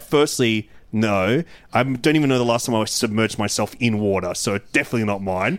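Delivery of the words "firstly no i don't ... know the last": ordinary delivery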